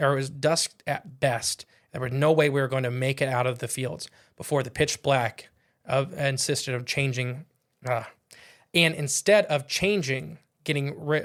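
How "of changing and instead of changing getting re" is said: ordinary talk, nothing marked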